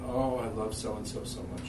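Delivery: plain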